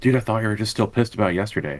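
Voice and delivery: quiet, low-key, friendly voice. Voicing a character speaking friend to friend while others hang back, in a quiet voice. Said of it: "Like quiet voice, friend to friend".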